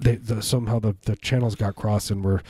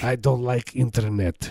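put-on Russian accent; 2 semitones higher than usual. Doing an impersonation of Vladimir Putin with a put-on Russian accent. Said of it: "I want to do my impersonation of Vladimir Putin".

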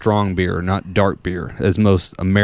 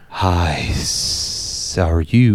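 very slow, drawn-out lisping snake voice; 3 semitones lower than usual. Retelling how the snake talks in the movie: lisping snake voice. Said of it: "he just always hits that lisp".

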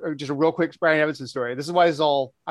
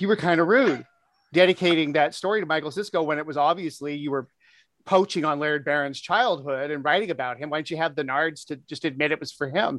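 plain

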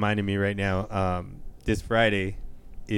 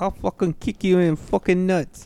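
put-on British accent, pitched very high; 10 semitones higher, 4 dB louder than usual. Asked by another speaker for a british accent, doing a put-on british accent. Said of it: "Give me a British accent".

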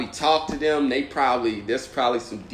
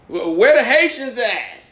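New York stand-up comic voice, higher and louder; 12 semitones higher, 9 dB louder than usual. Imitating local comics climbing on stage: imitating a new york urban comic on stage. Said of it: "them cats that climb on stage".

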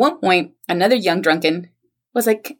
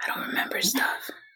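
breathy, tough-guy style whisper; 5 semitones higher, 12 dB quieter than usual. Acting out the line as a film hero would say it: Clint Eastwood voice. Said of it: "a line Clint Eastwood would say in a film".

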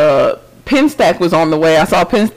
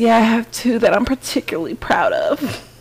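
put-on sultry, sexy voice, pitched higher; 5 semitones higher, 5 dB quieter than usual. Telling a story, a speaker quotes what a woman said in their apartment, in a mock-sultry voice. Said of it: "That's my la-la sexy voice".

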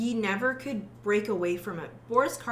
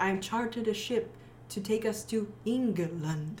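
put-on Hungarian accent, at a slower pace. Explaining how Dracula talks, a speaker quotes him in Dracula's Hungarian accent. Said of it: "phonetically saying".

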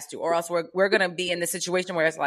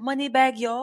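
put-on British accent, pitched up, quippy; 7 semitones higher than usual. Speaker retells a woman's answer, mimicking a british accent. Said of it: "In an accent".

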